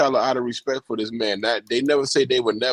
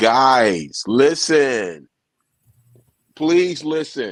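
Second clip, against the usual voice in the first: big, larger-than-life voice, "guys" drawn out; 3 dB louder than usual. Speaker addresses the guys listening about the recast, in a big voice. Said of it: "I'm gonna say in my big L voice".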